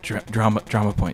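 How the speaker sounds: ordinary delivery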